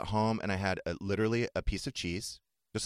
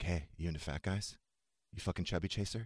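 mock-creepy tone, much quieter; 3 semitones lower, 7 dB quieter than usual. Retelling a joke the speaker said to Stu last night, retelling a creepy delivery. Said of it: "That's so creepy the way you say it".

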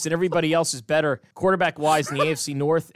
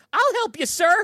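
put-on much higher-pitched polite teenage kid voice. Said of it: "A fifteen-year-old kid behind me was like".

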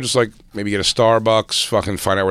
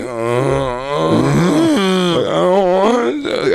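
put-on near-crying whimper, higher pitch; 9 semitones higher than usual. Retelling waking up from a nap before a show: imitating own past whimpering. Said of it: "audibly, like, whimpering, like, almost crying".

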